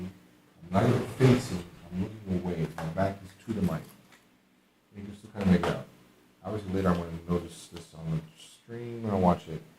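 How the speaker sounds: very quiet, hushed speech. Testing the microphone while facing away from it, talking really quietly. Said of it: "I'm talking really quiet".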